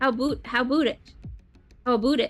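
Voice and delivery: failed Canadian accent. Reacting to a caller from Toronto, trying a failed Canadian accent. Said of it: "I would have a pretty decent Canadian accent".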